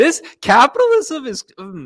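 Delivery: voice cracking, very high and very loud. Speaking to Pops about a state's six-thousand-dollar fine, voice cracking. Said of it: "my voice crack".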